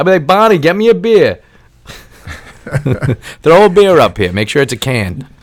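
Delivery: very high, swooping, hollering dad yell. Show how you would call downstairs to Bonnie from upstairs, imitating your own dad screaming down. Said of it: "I'll sound just like my dad".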